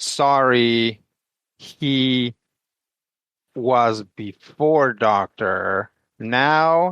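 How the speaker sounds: put-on halting German-accented speech. In a role-play scene, Dutch answers a guard in broken German. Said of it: "and like in broken German".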